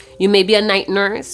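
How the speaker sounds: ordinary talk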